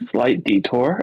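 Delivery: quiet whispered aside. In the game, a character whispers aside to Treos, whispering. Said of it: "I'll whisper to Treos".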